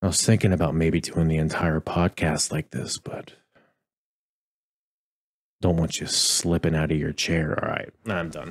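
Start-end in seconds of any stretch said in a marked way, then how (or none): 0.0-7.6 gentle, soft, hushed close-mic ASMR voice. Podcast host signing off to listeners, showing off an asmr voice. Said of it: "This is my A S M R voice".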